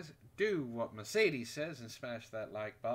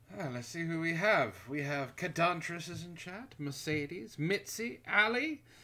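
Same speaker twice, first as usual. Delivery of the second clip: loud, raised voice, nearly yelled; 4 semitones higher, 4 dB louder than usual. Greeting chat viewers by name, talking loudly. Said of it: "Why are you yelling so much tonight?".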